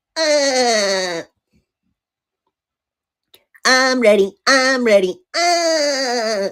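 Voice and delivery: very high, slow cartoon voice, uh dragged out. Doing an impression from a list of suggestions: SpongeBob voice.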